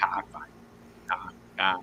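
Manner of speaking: fast, whispered, put-on Boston accent. Retelling how you once said a word, in a Boston accent. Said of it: "I used a Boston accent".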